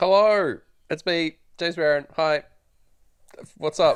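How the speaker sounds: high, staccato delivery, every word clipped short. Introducing himself on a podcast: staccato delivery. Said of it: "James has written little staccato notes above every word".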